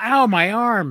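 mock, stiff wooden toy soldier voice.

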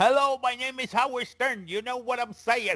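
very high-pitched put-on old man voice. Mocking how a radio personality sounds now: Howard Stern impression.

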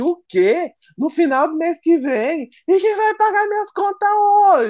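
very high, furious tirade, "hoje" stretched. Recounting what she told the woman from hr, retelling a furious outburst. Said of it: "Eu fiquei muito puta".

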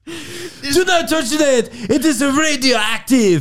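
put-on very high, slow, drawn-out Polish accent. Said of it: "It's a Polish accent".

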